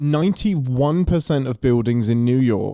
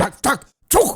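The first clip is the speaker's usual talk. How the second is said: put-on aggressive gibberish, much higher pitch. Asked what it would sound like, doing an impression: mock-aggressive made-up language. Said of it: "Is my impression of what".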